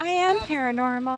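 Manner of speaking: little doll-like voice. Retelling a woman's reply when asked for a paranormal story, little doll voice. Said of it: "like a little doll voice".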